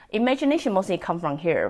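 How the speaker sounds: plain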